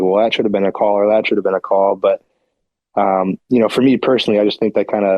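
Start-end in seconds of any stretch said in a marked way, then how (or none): none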